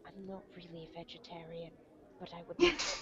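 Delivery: very quiet, hushed, secretive conspiratorial half-whisper. While he mumbles over books, she turns to Sir Auric and Volara in a conspiratorial half-whisper. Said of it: "what she considers to be a conspiratorial whisper".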